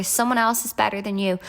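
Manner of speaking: usual speaking voice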